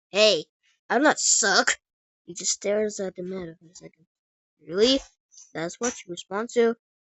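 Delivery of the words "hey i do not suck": slow, mechanical robotic voice with a slight biting edge. Narrator voicing a talking meter replying to a man, robotic voice with slight edge. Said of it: "with a slight edge to its robotic voice".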